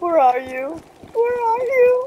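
frightened, nervous, scared voice, high and rising. Looking for someone who got behind him, scared. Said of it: "You sound scared".

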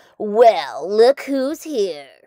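loud, slow, scornful scoffing. Jack the cactus sees dr. pete and the gang coming: scoffing. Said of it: "he scoffed".

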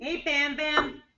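casual American-sounding accent. Greeting someone called Bam Bam, sounding American. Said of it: "You sounded so American then".

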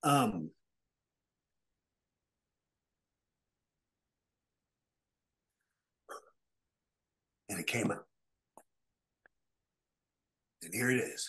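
voice catching with emotion. Speaking of family who always believed in them, the speaker gets choked up. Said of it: "I got a little choked".

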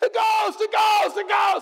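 mock very high, loud, frantic panicked shriek. Retelling disciples seeing a figure on the water: imitating panicked disciples. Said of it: "They all totally freak out".

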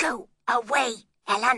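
whispering crossly. She steps up to the servant and sends her away, in a cross whisper. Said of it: "whispered crossly".

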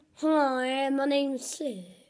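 slow, silly, goofy put-on voice. Doing impressions of friends, imitating Seb in a silly voice. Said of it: "doing a, you know, silly voice".

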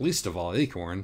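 ordinary delivery

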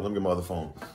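play-acted, dismissive, brushing off, with attitude. Retelling a phone call where she answered: imitating someone with an attitude. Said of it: "with an attitude".

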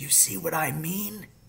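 quiet, breathy half-whisper. A father, kneeling beside his son near the pheasants, speaks to him: half-whispered. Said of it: "he whispered".

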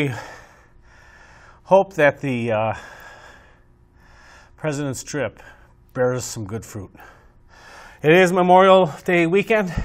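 breathless, winded speech. A broadcast host wrapping up before playing a Reagan clip, out of breath. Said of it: "I'm out of breath".

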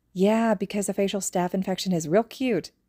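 ordinary delivery

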